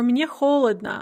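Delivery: normal talking voice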